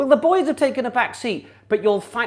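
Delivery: lingering hint of regal poshness. Speaking to listeners at Christmas after greetings, still half in the Queen voice. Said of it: "I'm still half talking in the Queen voice".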